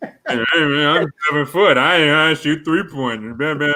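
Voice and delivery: mocking disrespectful voice. Showing friends an impression he calls disrespectful, a mocking disrespectful impression. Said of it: "It's so disrespectful".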